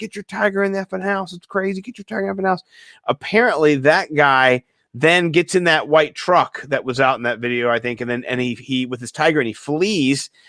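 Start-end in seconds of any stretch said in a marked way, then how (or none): 0.0-2.6 put-on furious yell, high-pitched and angry. Retelling how a man cussed at the tiger owner: imitating someone yelling and cussing. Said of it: "cussing at him, yelling".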